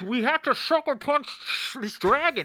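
mock bad-dub voice, belted out loud.

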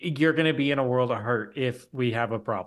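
normal talking voice

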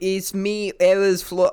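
slow, high, loud, drawn-out, bad Australian accent.

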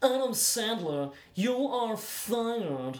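sneering, very slow, drawn-out drawl. Imagining an actor as a hotel manager bad guy: imitating Guy Pearce sneering. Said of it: "imagine him being like".

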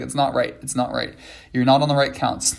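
ordinary talk, nothing marked

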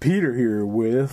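put-on silky, honeyed, laid-on smooth voice. Starting an announcement after the break, in a put-on smooth voice. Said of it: "I'm being smooth. Like honey".

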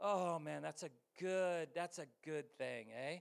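slow, drawn-out Canadian accent, leaning on "eh". A speaker reacts to their own remark in a group: Canadian accent. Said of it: "Sound like a Canadian".

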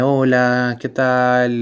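dejected, discouraged, limp, low-energy delivery. A speaker shows how not to greet a potential client: dejected, low-energy greeting. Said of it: "Como todo desanimado".

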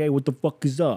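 put-on outer-borough New York accent. Imitating how a certain man talks, in a New York boroughs accent. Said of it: "He talks like he's from one of the boroughs in New York".

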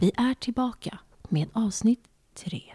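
narrator voice with storyteller's announcer delivery. Podcast host reopening episode three, using a narrator voice. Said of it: "Det är berättarrösten som är igång nu".

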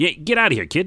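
put-on loud, very high-pitched, old-timey 1920s-40s style voice. Voicing one of the speaker's own old characters, 1920s-40s character voice. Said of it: "It's like my 1920s or 40s characters".

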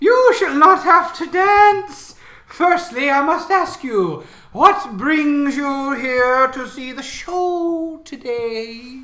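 echoing, very high, loud, slow showman voice.

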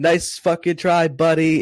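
put-on heavy Canadian accent. Performer quotes a front-row audience member, very Canadian accent. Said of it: "in like the most Canadian accent".

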